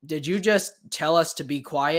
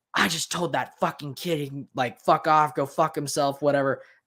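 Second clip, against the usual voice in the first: put-on loud, proud boastful voice. Retelling what a woman in the theater told her boyfriend: imitating someone saying it loudly. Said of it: "she was super loud when she said it".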